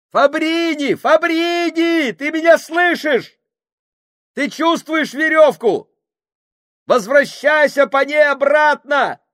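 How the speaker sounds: very high, loud calling shout. Men strain at a stuck rope as Kushing calls to Fabrini: shouted. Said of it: "крикнул Кушинг".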